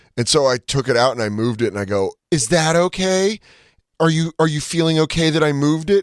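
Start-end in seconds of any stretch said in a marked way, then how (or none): 2.3-6.1 put-on full high-pitched baby talk voice. Retelling her words to a fellow passenger on a flight, in a baby voice. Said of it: "he was so mad that I was giving him baby voice".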